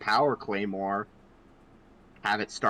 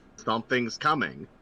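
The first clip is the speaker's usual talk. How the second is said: normal talking voice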